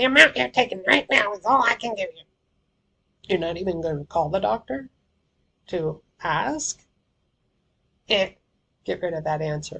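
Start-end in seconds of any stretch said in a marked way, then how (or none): 0.0-2.2 nastiest nurse voice, loud and fast. Rereading the nurse's line on request, in a nasty nurse voice. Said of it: "in the nastiest nurse voice you've got".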